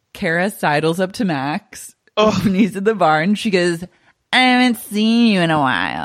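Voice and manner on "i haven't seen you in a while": put-on drunk, slurred speech, words running together. Narrator voicing Kara as she sidles up to Max at the bar, Kara, drunk and slurring. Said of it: "She's slurring".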